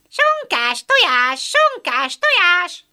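very high, slow, squawking hen screech. Narrator voicing a sitting hen in a henhouse, screeching. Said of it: "Rikácsolta az ülő natyúk".

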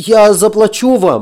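high, frightened voice. A narrator reads Ron's line to Arkady: frightened. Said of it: "Испуганно проговорил Рон".

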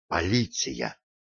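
whispering, out of breath. A woman wakes a sleeping man after looking out the window, breathless whisper. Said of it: "задыхаясь, прошептала Глори".

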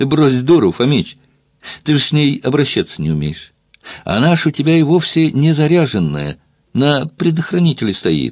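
feigned hearty cheerfulness. A man addresses an armed man in a standoff, with feigned cheerfulness. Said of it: "с наигранной бодростью произнес Елагин".

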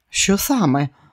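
suddenly worried, anxious, alarmed. Diana finally grasps Kelly's fear and asks her, alarmed. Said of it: "стривожилась вона".

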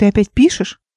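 ordinary delivery

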